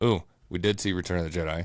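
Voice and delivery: ordinary talk, nothing marked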